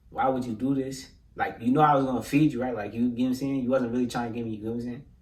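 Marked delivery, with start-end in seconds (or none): 0.2-2.8 level-headed, calm, searching, wondering tone. Retelling how a man holding a rolling pin questioned him, imitating calm questioning. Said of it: "he calmed down, he not yelling no more".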